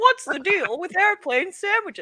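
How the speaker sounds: very high-pitched observational stand-up comic delivery. After people keep repeating the same question, turn it into a Seinfeld impression.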